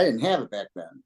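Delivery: normal talking voice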